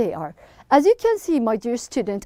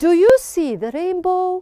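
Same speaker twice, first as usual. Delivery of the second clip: asking tune lifting through rainbow; 3 semitones higher than usual. Reading a sentence aloud again to show it ends as a question; rising question intonation. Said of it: "So it sounds like a question".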